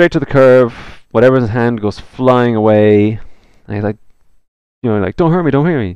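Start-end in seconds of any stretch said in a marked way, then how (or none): 5.2-6.0 high, panicked, pleading voice. Narrating a game scene, voicing a knocked-down young man, panicking. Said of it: "he's like just panicking a bit".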